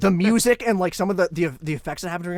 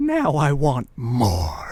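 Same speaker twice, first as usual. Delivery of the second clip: low, deep, sinister, swooping evil voice; 4 semitones lower than usual. Speaker retells a Family Guy clip, imitating Herbert's most evil voice. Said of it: "he just goes in the most evil voice".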